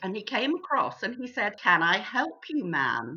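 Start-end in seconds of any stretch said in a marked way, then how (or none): 1.6-3.2 put-on very low, deep, slow drawn-out American accent. Retelling how a man in a gallery offered her help, in an american accent. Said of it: "in a wonderful American accent".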